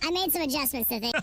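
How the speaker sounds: helium-pitched voice. Testing voice adjustments, speaking in a high helium voice. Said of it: "instant to the helium voice".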